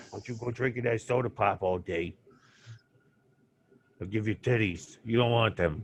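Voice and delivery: soft, put-on Brooklyn accent. Showing how his dad really sounded giving a warning, imitating dad, Brooklyn accent. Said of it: "doesn't really talk with a Bro- like a Brooklyn accent".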